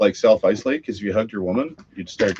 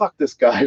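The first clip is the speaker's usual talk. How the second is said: worked-up, fired-up, animated, heated outburst; 4 semitones higher than usual. Retelling a moment of chirping at the referee: retelling own animated outburst. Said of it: "I got animated".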